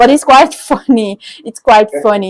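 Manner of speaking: laughing through the words. Speaker finds the point funny mid-discussion, laughing while talking. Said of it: "Sorry, I'm laughing".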